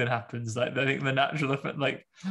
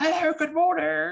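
bright, very high, extra-nice, big cheerful voice; 4 dB louder than usual. Speaker demonstrates the nicer-than-regular voice used to say hello, biggest, most cheerful voice. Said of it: "I do my biggest, most cheerful".

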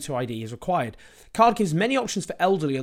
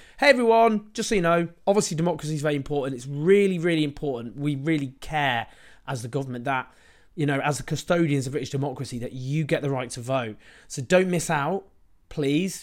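ordinary talk

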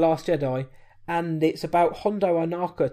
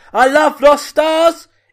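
mock very high, loud, thrilled excited shout; 10 semitones higher, 12 dB louder than usual. Reading out a listener's Instagram shout-out, imitating her excited shout. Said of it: "she also shouted, ... In that exact voice".

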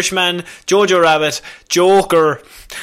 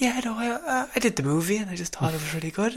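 very quiet, soft, hushed, barely-there voice; 3 semitones higher, 13 dB quieter than usual. Imitating Renee Zellweger talking at an actress roundtable: imitating Renee Zellweger talking very quietly. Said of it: "so quiet".

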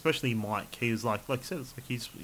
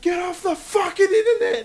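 screaming, very loud, shrill and high-pitched; 12 dB louder than usual. Retelling a character tearing out of the room: imitating Jim yelling. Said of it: "He's just like yelling at everybody".

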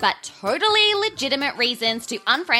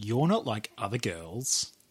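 acted creepy voice, lower and quieter; 14 semitones lower, 9 dB quieter than usual. Playing the role of the creep saying a cheesy line: creep role. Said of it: "play the role of the creep".

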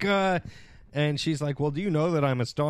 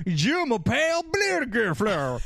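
high, cartoon Southern Texas girl's accent; 8 semitones higher than usual. Retelling what a Southern girl said to her, in a Southern Texas accent. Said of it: "she doing a Southern Texas accent".

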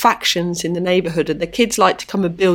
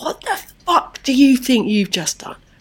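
mock furious shouting outburst, high pitch; 6 semitones higher than usual. Retelling turning on a young man who grabbed her: imitating own angry outburst. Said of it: "I was quite pleased that I went mad".

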